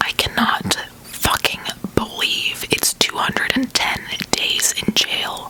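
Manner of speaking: hushed, soft, breathy ASMR whisper. Speaker calms down and says this in a soft whispery ASMR voice. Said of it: "I'll say this in my A S M R voice".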